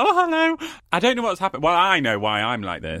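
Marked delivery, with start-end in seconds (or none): 0.0-0.7 play-acted, very high, giggly and bubbly voice. Retelling own greeting at the start of the podcast: imitating own giggly greeting. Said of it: "I'm so giggly. That's why I started being like".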